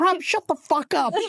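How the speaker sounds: fierce, very high, drawn-out yell. Showing the others how Chippy yells and swears: imitating Chippy yelling and swearing. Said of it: "Yell and swear at her just for two seconds".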